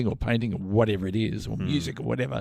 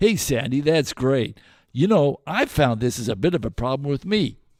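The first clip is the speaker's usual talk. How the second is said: synthetic, American-style AI podcast host voice; 3 semitones higher than usual. Imitating the guy and girl of an American AI podcast: imitating an American AI podcast host. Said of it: "It was a girl and a guy".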